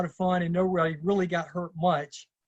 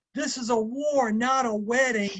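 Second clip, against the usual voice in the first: put-on, high, intense instructor screaming, toned down; 6 semitones higher than usual. Describing an intense seminar leader, imitating a seminar leader screaming. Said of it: "he was screaming like".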